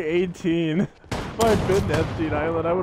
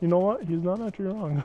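usual speaking voice

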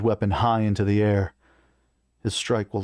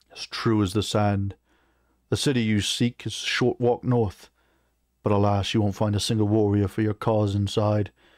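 plain

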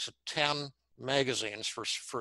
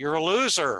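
raised, loud shouting; 4 semitones higher, 8 dB louder than usual. Walking home from the train station, the speaker retells shouting at himself: retelling own shouting. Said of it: "I started shouting out loud".

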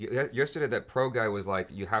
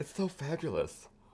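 high-pitched, flamboyant, campy, fabulous-sounding voice; 8 semitones higher, 4 dB quieter than usual. Answering another speaker who asks if they love that voice: fabulous West Hollywood voice. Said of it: "You know you love that voice".

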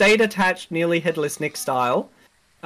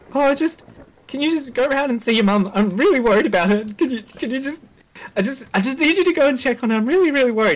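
high, worried, panicked voice on verge of cracking; 7 semitones higher than usual. Retelling a phone call from dad: imitating a panicked voice near breaking. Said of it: "His voice is on the verge of breaking".

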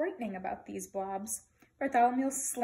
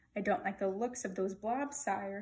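ordinary delivery

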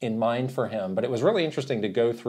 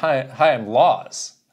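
very drawn-out, slow put-on British accent; 4 dB louder than usual. Retelling a visiting developer introducing himself: imitating a British accent. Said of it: "obviously in a British accent".

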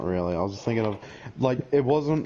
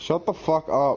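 irritable, short-tempered, testy, pitched-up retort; 6 semitones higher than usual. Responding to the other speaker's ice cream offer, testy. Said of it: "Why are you so testy all of a sudden?".

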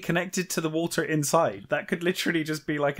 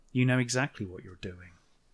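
put-on mutter under breath, lower, quieter; 6 semitones lower, 5 dB quieter than usual. Retelling a book scene where a man kneels to cut grass, mock muttering under breath. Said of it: "he mutters something under his breath".

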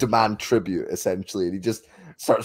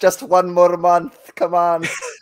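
put-on Scottish accent, pitched up; 9 semitones higher, 6 dB louder than usual. Putting on a voice while discussing accents in a film, in an accent that sounds scottish. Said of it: "That sounds Scottish".

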